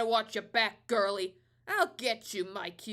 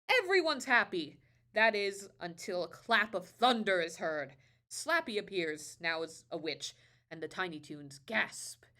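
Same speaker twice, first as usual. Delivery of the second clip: ordinary delivery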